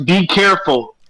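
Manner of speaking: loud shouting. In a tabletop game, the character Luna shouts to the others: shouting a warning. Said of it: "Luna shouts".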